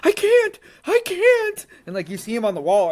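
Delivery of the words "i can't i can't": put-on very high, drawn-out, desperate panicked cry. Retelling a fighter's words while pinned against the cage: imitating someone panicking. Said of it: "You hear Rodney panically, like, panicking".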